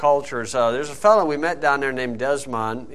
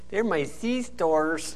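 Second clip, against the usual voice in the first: put-on Spanish accent, pitched much higher; 4 semitones higher, 5 dB quieter than usual. Retelling how a woman answered a police officer's question: Jen's put-on Spanish accent. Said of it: "Jen got her Spanish accent".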